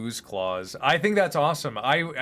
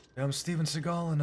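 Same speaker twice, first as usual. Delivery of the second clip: put-on whispering voice, quieter; 3 semitones higher, 7 dB quieter than usual. Asked by a viewer for a Steven Seagal voice: Steven Seagal voice. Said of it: "can you do a Steven Seagal hair and voice?".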